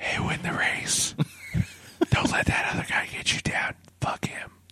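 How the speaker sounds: hushed, soft, encouraging whisper. Acting out a horse whisperer urging a horse to win: whispering to a horse. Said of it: "whispering into, to the horse".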